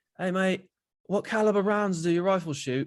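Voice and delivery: high fake British accent. Retelling what a british soldier asked on a training mission: imitating a british accent. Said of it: "with some British soldiers".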